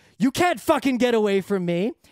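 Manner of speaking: ordinary talk, nothing marked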